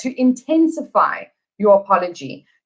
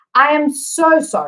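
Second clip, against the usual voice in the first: strongest, heavy emphasis on the word so; 4 semitones higher than usual. English lesson on word stress, first example sentence: strongest stress on so. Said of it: "with the emphasis on so".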